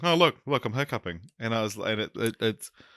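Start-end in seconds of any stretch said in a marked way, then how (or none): 0.0-1.2 play-acted drunken, tipsy, show-off manner. Retelling how another speaker kept interrupting a story: imitating a drunk friend hiccuping. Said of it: "you kept on interrupting my story to be like".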